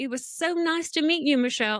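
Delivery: bad Australian accent. Retelling what Keith said while walking away, Keith's bad Australian accent. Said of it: "he says in his little Australian accent".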